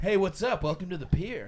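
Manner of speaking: put-on surfer voice. Imitating the greeting workers at the front had to say: put-on surfer voice. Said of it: "you had to say it in that voice".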